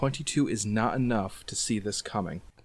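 plain

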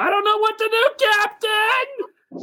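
very high, rising scream of terror. A game master voices a terrified character screaming at the captain, terrified screaming. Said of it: "He is screaming at you".

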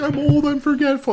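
put-on very high, slow, tearful sobbing voice. Retelling what a character said while crying: imitating someone crying. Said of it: "When she's crying, she's like".

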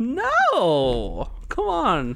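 very high mock-dismayed, pleading falsetto, pitched way up.

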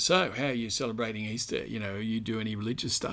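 light, jocular, teasing tone. Speaker quotes what a man said to him at Easter, retelling a jocular tone. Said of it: "said to me in a jocular tone".

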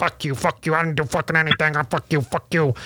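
imitated drunken slurring of words. Retelling a friend's reply in the tent: imitating a drunk friend. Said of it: "drunk, like, coma status".

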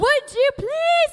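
put-on banshee screaming. Retelling how Mom finally screamed when the kids ignored her, imitating a screaming mother. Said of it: "full-fledged screaming banshee".

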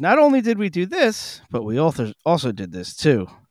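put-on posh British accent, sing-song. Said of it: "this guy's accent is real fancy".

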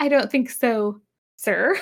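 put-on sassy tone. Retelling a reply to a question from Kirk: imitating a sassy reply. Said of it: "so, like, sassy".

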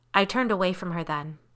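ordinary delivery

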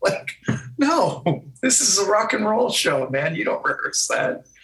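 high, incredulous mocking voice, pitched way up. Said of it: "I'm thinking to myself".

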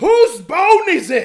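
very loud, very high, drawn-out outburst. Speaker reenacts what she apparently blurted at the doctor, re-enacting a really loud voice. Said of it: "in a really loud voice apparently i went".

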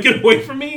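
real, heated, legitimately angry tone. Retelling a movie scene where he snaps at a wedding guest: imitating Ray Liotta angry. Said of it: "he seems so legitimately angry".

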